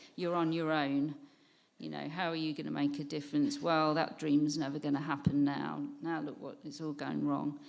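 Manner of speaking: ordinary talk, nothing marked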